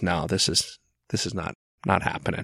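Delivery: put-on calm, low and quiet. Retelling how a man answers claims about him, retelling a calm denial. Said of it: "but he calmly goes".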